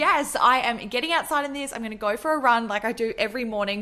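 normal talking voice

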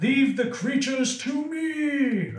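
put-on slow, high old-man ogre voice. Narrator voicing an ogre shouting as the listener runs past, old man ogre voice. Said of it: "That ogre sounds like an old man".

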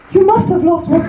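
put-on bad, very high falsetto. Speaker takes a turn voicing Freya for the others, a bad Freya impression. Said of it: "imitate a woman who's never heard a woman before".

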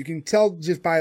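normal talking voice

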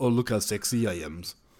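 sexy, self-admiring, preening, seductive vampire voice. Mocking the vampires in a show: imitating a vampire acting sexy. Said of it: "these vampires are all like".

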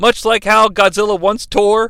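ordinary talk

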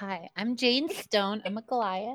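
gentle, feminine tone. A speaker introduces a new character to the group: Jane Stone female voice. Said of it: "you do a very good female voice".

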